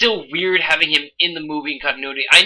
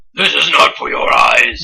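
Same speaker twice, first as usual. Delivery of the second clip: slow, creepy, menacing horror villain voice; 2 semitones lower, 4 dB louder than usual. Discussing how a character should sound, speaker demonstrates a Hellraiser voice. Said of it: "Hellraiser voice".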